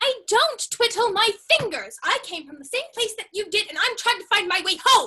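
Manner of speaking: high, loud yell. A girl trying to find her way home answers the one scolding her, yelling. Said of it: "Are you yelling at me?".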